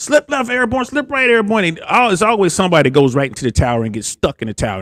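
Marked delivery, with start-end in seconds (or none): 0.0-1.6 screamed drill-instructor voice, high-pitched, bullhorn-like. Retelling jump training instructors on bullhorns: imitating instructors screaming. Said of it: "they're screaming at you through the bullhorns".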